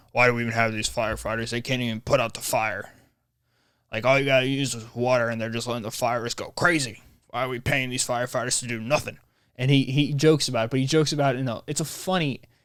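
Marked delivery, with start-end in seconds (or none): 0.2-9.2 really raspy, mocking voice. Retelling a podcast bit, doing a Tim Dillon raspy-voice impression. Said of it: "He talks like he's got a really raspy voice".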